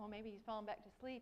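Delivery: ordinary delivery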